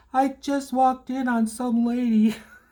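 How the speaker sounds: high, slow speech giggled through laughter. Retelling what a girl said walking to a car: imitating a girl laughing while talking. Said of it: "she was laughing".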